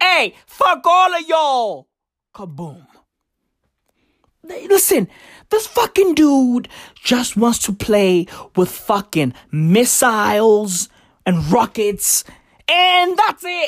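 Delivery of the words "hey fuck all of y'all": high, dismissive, contemptuous tone. Acting out Kim Jong-un mocking the world's panic: imitating Kim Jong-un. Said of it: "He's like".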